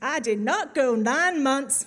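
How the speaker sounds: loud, sassy put-on Southern US accent. Quoting a line from a billboard, in a sassy southern American accent. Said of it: "it's a bit of a southern accent".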